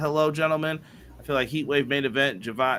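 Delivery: plain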